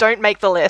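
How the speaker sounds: ordinary talk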